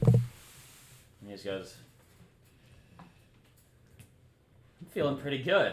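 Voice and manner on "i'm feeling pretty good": sarcastic, pitched-up delivery. Voicing a character who was just healed by magic: sarcastic. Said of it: "It was sarcasm".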